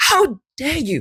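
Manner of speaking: scandalised indignation, pitched very high. Retelling being propositioned while waiting for the phone: retelling own offended outrage. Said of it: "clutching invisible pearls".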